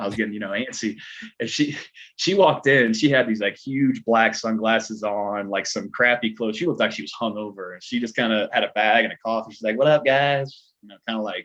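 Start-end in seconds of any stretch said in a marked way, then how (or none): 9.8-10.7 loud, offhand, tossed-out celebrity delivery. Retelling how Catherine walked into the makeup trailer and greeted everyone: Paris Hilton-style voice. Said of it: "kinda like, you know, Paris Hilton thing".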